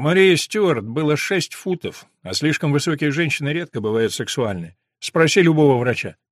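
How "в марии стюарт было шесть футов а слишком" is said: usual speaking voice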